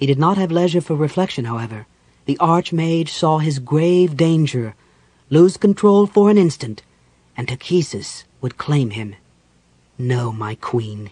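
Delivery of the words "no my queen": low, murmured, held-back voice. Narrator reading the Archmage addressing his queen, murmured. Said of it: "he murmured".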